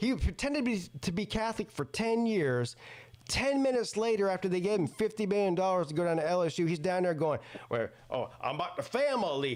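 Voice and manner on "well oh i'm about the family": put-on Cajun accent. Mocking a coach faking a local accent: imitating Brian Kelly's Cajun accent. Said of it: "with the Cajun accent".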